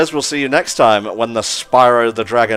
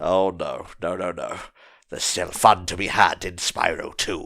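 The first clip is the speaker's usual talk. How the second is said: sleepy demon voice, lower, quieter; 4 semitones lower, 8 dB quieter than usual. Talking about what's left after beating the boss in Spyro two, sleepy demon voice. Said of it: "That's my sleepy demon voice".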